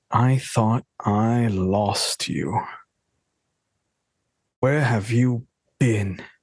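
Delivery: tightly held stage whisper. Voicing a father hugging his son tightly, half-whispering in his ear. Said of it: "he just whispers".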